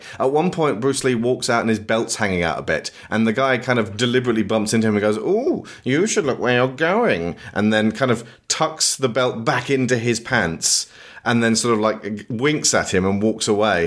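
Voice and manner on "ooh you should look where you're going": put-on, mincing, camp voice. Retelling a film scene where a man bumps into another man, mincing camp voice. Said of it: "a mincing queen version".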